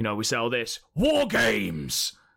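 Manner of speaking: dreadful attempt at gravelly, manly tough-guy voice. After apologising to anyone in advance, make a dreadful attempt at a gravelly, manly voice. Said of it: "now this is going to be dreadful".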